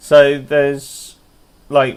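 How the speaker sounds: plain reading voice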